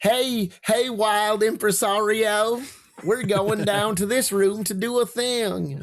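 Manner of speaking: put-on Southern accent character voice. Trying out an accent for a worm-like puppet, in a Southern accent. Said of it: "that's a better southern accent, frankly".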